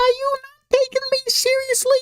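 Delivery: silly, very high-pitched squeaky voice. Discussing voices for a fan anime casting, a silly high-pitched Gru voice. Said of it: "like high-pitched voice like".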